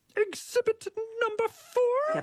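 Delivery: very high-pitched pig diva puppet voice. Urged by friends, a speaker reads out an exhibit label in a Miss Piggy voice. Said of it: "read that in a Miss Piggy voice".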